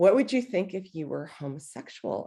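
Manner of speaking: very gentle, soft tone. Recalling what a spiritual director once asked them, retelling a very gentle voice. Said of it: "in a very gentle voice".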